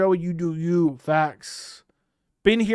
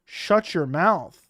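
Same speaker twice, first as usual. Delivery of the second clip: usual speaking voice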